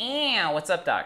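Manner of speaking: slow, drawn-out cartoon rabbit voice. Showing how a learner would answer a request for a Bugs Bunny impersonation. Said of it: "Give me a Bugs Bunny impersonation".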